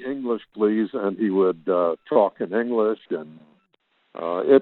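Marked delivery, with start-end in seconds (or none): none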